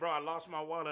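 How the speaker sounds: ordinary talk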